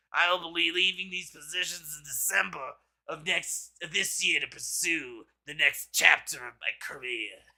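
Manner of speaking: put-on nasal, throaty voice. Reading out a resignation statement as an impression: Fauci impression. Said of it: "if I was doing a Fauci impression".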